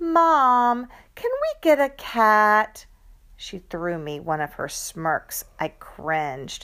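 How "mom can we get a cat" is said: annoyingly fake, sugary, sing-song, drawn out. A daughter asking her mother for something, in an annoyingly fake sweet voice. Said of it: "in her most annoyingly fake sweet voice".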